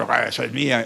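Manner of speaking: deep, demonic man's voice. Retelling a possessed person's voice changing mid-greeting: imitating a demon's man's voice. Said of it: "le cambia la voz y habla una voz de hombre".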